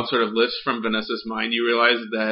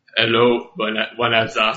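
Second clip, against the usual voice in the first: put-on Russian character voice; 4 dB louder than usual. Game character Leo answers the player who called to him, terrible Russian accent. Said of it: "My terrible Russian accent".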